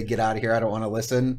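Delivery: plain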